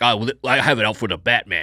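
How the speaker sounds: put-on slight New York accent. Acting out a crooked-cop type from the Batman films: vaguely New York accent. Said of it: "that vaguely sort of New Yorky guy who's just like".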